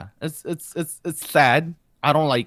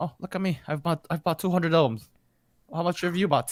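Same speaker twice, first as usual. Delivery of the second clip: mock Irish accent, quieter; 3 semitones higher, 4 dB quieter than usual. Imitating fans bragging about albums bought: put-on Irish accent. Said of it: "You were going for Irish there?".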